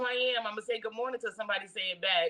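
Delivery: ordinary talk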